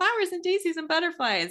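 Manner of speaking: very high-pitched delivery. Imitating how she sounds in Diary: imitating her way of saying it. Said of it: "you said it exactly the way she says it".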